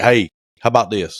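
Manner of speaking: plain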